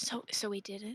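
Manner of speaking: soft, hushed whisper under the breath. Voicing Runa answering the hugging character: whispering. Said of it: "And Runa just whispers".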